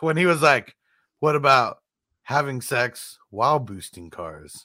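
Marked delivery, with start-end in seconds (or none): 1.2-4.6 dry, one-note, very monotone, expressionless delivery. Discussing an actor who plays the same guy, the speaker quotes him very monotone. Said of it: "very monotone".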